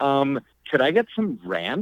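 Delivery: uptalk, lilting upward at the close. Retelling what a girl at another table said, imitating her uptalk. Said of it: "she's doing that like up talk thing".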